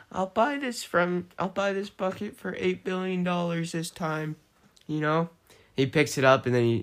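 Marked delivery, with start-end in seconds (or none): 0.1-4.3 high, raised mock yell directed downward. Retelling a dream where someone yells down from a helicopter: imitating someone yelling down. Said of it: "yells down".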